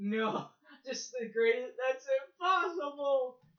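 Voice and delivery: high, loud voice on the verge of tears. Retelling a movie scene, acting Luke's reply: imitating Luke close to tears. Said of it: "he's on the verge of fucking tears".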